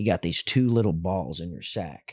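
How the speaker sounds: very low put-on Southern accent. Recalling an explanation a man gave them as a kid: imitating a Southern accent. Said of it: "had a Southern accent".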